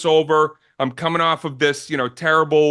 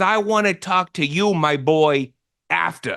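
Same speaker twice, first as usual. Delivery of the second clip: put-on old comedian voice. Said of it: "the voice that I grew up loving".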